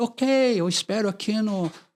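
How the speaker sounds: put-on American accent. Retelling a priest's phone call, imitating his american accent. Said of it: "com aquele sotaque americano".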